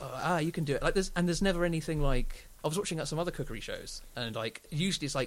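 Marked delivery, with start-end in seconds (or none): none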